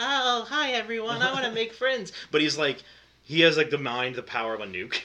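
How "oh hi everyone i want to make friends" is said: put-on very high-pitched, dorky kid voice. Describing a show's psychic kid who wants friends: imitating a dorky kid. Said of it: "this very dorky".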